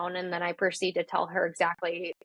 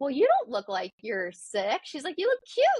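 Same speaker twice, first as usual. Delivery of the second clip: put-on cheerful voice, higher pitch; 7 semitones higher than usual. Retelling what the nurse practitioner said on walking in: imitating a cheerful nurse. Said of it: "she's all, like, cheerful".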